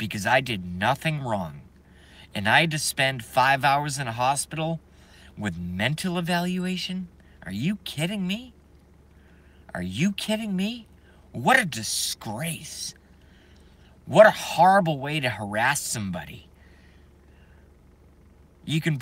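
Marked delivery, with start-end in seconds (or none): 0.0-16.5 voice full of hatred, angry ranting. Speaking to viewers about what happened, with hatred in the voice. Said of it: "hear the hatred in my voice".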